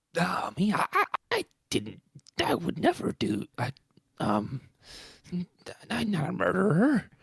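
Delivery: very high, loud, swooping voice with stammering. Answering a request to voice the caretaker denying the murder: Filch voice. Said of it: "How do you think Filch would".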